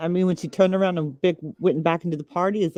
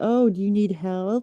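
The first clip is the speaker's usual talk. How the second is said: slow, derisive, taunting, mocking tone; 4 semitones higher than usual. Discussing what happened to someone at a party, acting out how others might ask: imitating a mocking tone. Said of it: "Like a mocking way".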